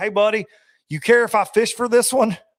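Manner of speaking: high calling yell. Retelling a sight-fishing story where another angler calls over: imitating John Cox yelling. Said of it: "he yells at me".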